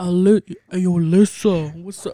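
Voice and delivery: put-on deep voice. Imitating a friend who calls, deep voice: Fabian's deep voice. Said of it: "with the deep ass voice for no motherfucking reason".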